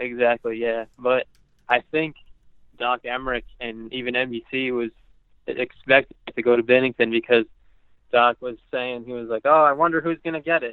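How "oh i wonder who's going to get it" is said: put-on dry, sarcastic, musing voice. Retell what Doc was saying about who gets it, in a mock-sarcastic voice. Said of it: "like in a sarcastic voice".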